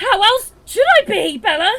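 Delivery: shrill, high, loud, angry furious yell. Answering someone who says they know you must be angry, shouting.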